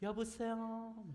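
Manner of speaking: acted, kindly, sugary, sweet, high voice. Imitating a mom answering a phone call: mock-sweet, gentle phone voice. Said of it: "되게 상냥하게 바뀐다라는 겁니다".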